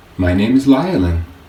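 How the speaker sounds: happy, cheerful, glad voice. A little Tawalan twirls, bows and tells a giant her name, happy voice. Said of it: "said in her happy voice".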